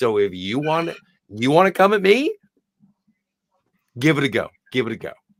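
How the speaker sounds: put-on calm delivery. Quoting a woman's line from a bit you both admire; mimicking her calm delivery. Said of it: "I love how she says it so calmly".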